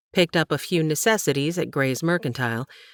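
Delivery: plain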